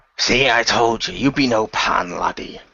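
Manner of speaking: put-on pirate captain voice, slow drawl. Narrating a sword duel, the storyteller voices the captain: pirate captain voice. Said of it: "they can see a man dressed in red with a hook for a hand. / they can see a man dressed in red with a hook for a hand. / he says as he fires his cannons and trying to shoot the targets as they fly thro".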